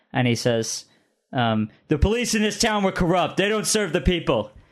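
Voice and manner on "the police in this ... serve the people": high yelling, matching the energy. Voicing a character who matches a player's energy: yelling back. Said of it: "he matches your energy, yelling back".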